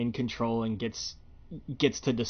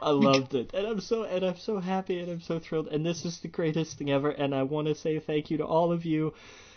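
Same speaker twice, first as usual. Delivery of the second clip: put-on tearful gushing crying voice, much higher; 5 semitones higher than usual. Retelling a woman's speech given while she was in tears, imitating someone crying. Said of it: "she was in tears, she's crying".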